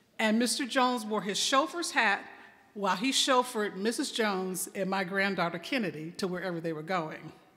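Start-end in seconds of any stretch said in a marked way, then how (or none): none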